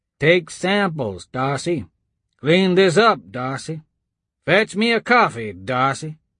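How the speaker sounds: grumbled, mocking voice, as if to oneself. A man cleaning up grumbles to himself, in a grumbling mockery of Brevard. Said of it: "grumbled to himself in a mockery of Brevard's voice".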